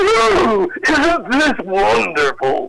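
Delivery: put-on ghostly butler voice, high and swooping. Recalling a ghost butler character they played, in the butler voice. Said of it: "he was a butler character".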